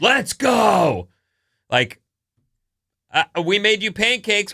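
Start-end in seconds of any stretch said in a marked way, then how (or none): 0.0-1.1 mock all-out kid scream, "go" drawn out. Describing what the oldest kid says regularly, imitating a beast-mode 'Let's Go' scream. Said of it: "beast mode "Let's Go" voice".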